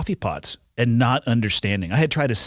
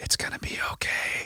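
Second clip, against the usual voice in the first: very soft, slow, breathy, hushed whisper. Retelling holding on to an injured tandem passenger: imitating a whisper. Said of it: "and then you just hold on to them and whisper".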